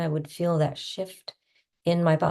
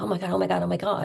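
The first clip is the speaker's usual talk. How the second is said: mock frustrated overwhelm, higher; 5 semitones higher than usual. Retelling what he said to himself while feeling frustrated and overwhelmed and tapping rapidly. Imitating frustrated overwhelm. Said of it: "if I was feeling really frustrated and overwhelmed".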